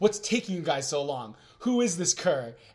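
plain

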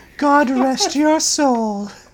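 slow, sinister, creepy evil doll-like puppet voice. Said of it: "that sounded like an evil puppet".

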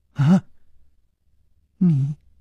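quavering, unsteady, trembling voice. Reading a shocked man's words to another character, in a trembling voice. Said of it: "他颤声说".

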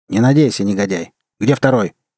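ordinary delivery

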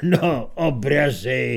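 contemptuous, scornful muttering. The dean responds to talk of someone's paintings, a contemptuous mutter. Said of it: "ucedil pohrdavě děkan".

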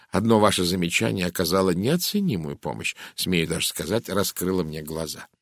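ordinary delivery

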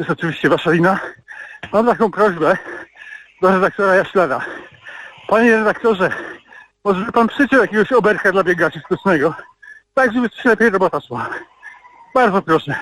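breathless, panting, out of breath. Listener calling in while running, asking the editor for a tune, out of breath. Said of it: "Przepraszam, że dyszę, ale biegam".

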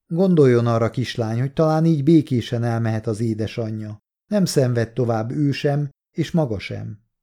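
ordinary delivery

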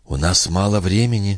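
soft, hushed whispering. Juno nudges the young man with her elbow and whispers to him. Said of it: "шепнула она".

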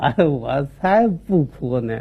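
put-on low, drawn-out drunk man voice.

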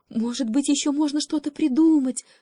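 shy, meek, timid voice, high and small. An alder among other trees asks a question, timid. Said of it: "робко спросила ольха".

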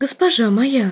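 urgent, insistent, hushed whisper. A servant tugs her lady's elbow and addresses her: urgent whisper. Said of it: "настоятельно шепнула служанка".

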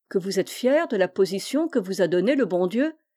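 ordinary delivery, nothing marked

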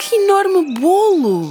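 very high exclamation, stretched bolo. Narrating a story, voice a girl at a welcome party, exclaiming. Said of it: "exclamou a Carolina".

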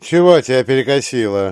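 loud, biting, caustic sarcasm. Narrator reads another character's remark to the first-person narrator, sarcastic remark. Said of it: "язвительно замечает Олив".

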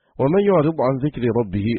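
normal talking voice

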